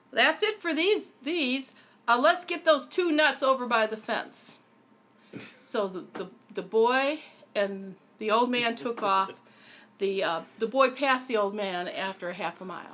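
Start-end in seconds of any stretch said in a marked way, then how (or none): 0.1-4.5 put-on very loud, booming voice. Telling a story, the older boy in a graveyard calls out: very loud voice. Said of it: "says in a very loud voice".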